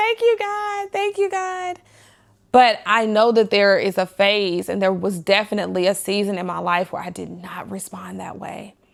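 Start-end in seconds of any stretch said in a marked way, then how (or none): 0.0-1.8 mock crying voice, very high and tearful. Retelling a moment of answered prayer: retelling own tearful thanks. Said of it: "then I'm really crying".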